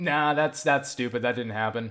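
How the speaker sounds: imitated dismissive, scornful attitude. Retelling an argument, imitating a friend's dismissive attitude. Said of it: "I'm trying to imitate the attitude".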